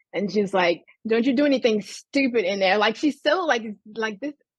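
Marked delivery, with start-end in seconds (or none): 1.1-2.8 put-on angry voice. Retelling a parent's warning through a bathroom door: imitating mom's angry warning. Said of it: "this, like, anger".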